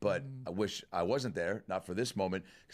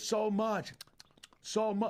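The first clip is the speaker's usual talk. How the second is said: put-on very high, slow, drawn-out thick Korean accent; 14 semitones higher than usual. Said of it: "Her accent was just, you know, pretty thick".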